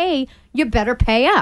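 ordinary talk

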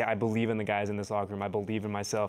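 ordinary delivery

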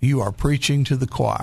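usual speaking voice

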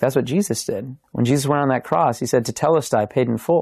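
ordinary talk

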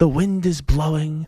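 voice brought down, golf-commentator broadcast style. Pretending to talk golf at Augusta's 18th hole, in a lowered voice. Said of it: "Let me lower my voice a little bit".

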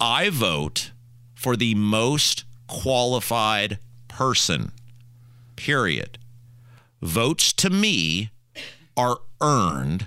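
very slow, deliberate, drawn out one word at a time. Speaker stating a point, saying it as slow as they can: as slow as possible. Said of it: "I'm going to say it as slow as I can".

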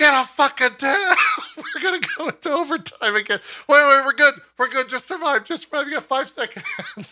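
mock, high scream at the top of the lungs. Recalling a close overtime match, retelling screaming at teammates.

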